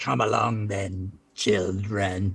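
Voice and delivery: flat, robotic, machine-like mechanical snarl. A woman with lightning crackling in her hands addresses the children: really mechanical-sounding voice. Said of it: "in this really mechanical sounding voice".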